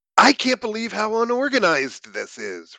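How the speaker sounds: very high-pitched, squawking voice. Randy speaks up to the others: squawking. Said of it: "Randy squawks".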